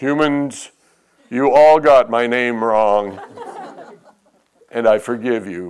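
grand, godlike voice, as from the heavens. Imagining the heavens parting and a god addressing all humans: booming god voice. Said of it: "we'll hear this booming voice".

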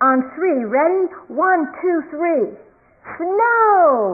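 high screaming with the word "snow" drawn out. Retelling what he shouted up at the heavens, imitating a scream. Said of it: "he starts to scream".

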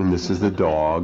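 put-on formal British accent. Describing a TV segment filmed in someone's home, BBC formal British accent. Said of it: "in this nice formal British accent".

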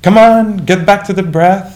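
high, loud shouting voice. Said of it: "shout at oneself".

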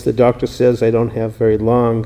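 ordinary delivery

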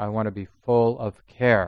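word full strongly stressed. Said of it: "I want to be careful here".

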